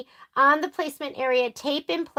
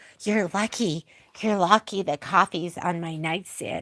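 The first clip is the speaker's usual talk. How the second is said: muttering under breath, lower; 7 semitones lower, 3 dB quieter than usual. Retelling a remark made one morning: imitating muttering under breath. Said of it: "under my breath, I go".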